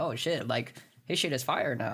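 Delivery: normal talking voice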